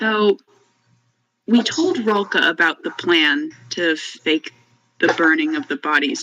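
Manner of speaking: secretive, confidential, leaned-in aside tone. During a tavern meal, a character asks the group a question: lowered voice. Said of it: "leans forward and lowers his voice".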